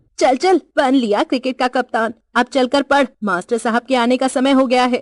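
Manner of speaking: failing to hold anger, boiling over. A woman replying to a boy, anger boiling over. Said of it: "क्रोध को रोक सकने में असफल होकर".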